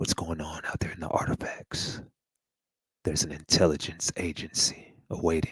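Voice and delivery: eerie, creepy, breathy whisper. Addressing viewers, the speaker slips into a creepy voice. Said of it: "Let me get in my creepy voice".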